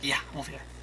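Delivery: very quiet, barely audible little whisper. Speaking in character while hidden, making presence known: whispering a little. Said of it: "whisper a little bit".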